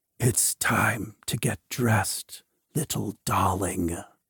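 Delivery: dry, hissing, sibilant half-whisper, very low. Narrating a voice that half-whispers into her ear, dry, sibilant half-whisper. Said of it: "a dry, sibilant voice whispers into her ear".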